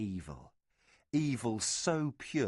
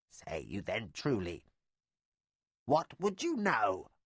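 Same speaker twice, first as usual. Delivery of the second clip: throaty, dry croaking with fear. Reading a story aloud, the frightened witch asks what they would know: croaking, fearful voice. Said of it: "In croaking tones, her throat dry with fear".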